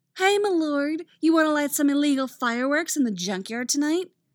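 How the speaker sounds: high, derisive sneer. Narrator reads Artemis's mocking line in a story; Artemis's high, derisive voice. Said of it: "Artemis puts on a high, derisive voice".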